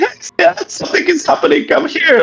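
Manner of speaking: put-on screaming. Retelling how the ex called out from the kitchen table: imitating someone screaming. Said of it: "he just started screaming".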